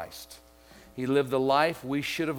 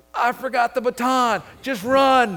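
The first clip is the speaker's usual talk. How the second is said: high, drawn-out yell through laughter; 11 semitones higher, 10 dB louder than usual. Retelling a relay race, the speaker acts out a runner's shout, retelling a laughing yell. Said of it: "he's laughing and yelling".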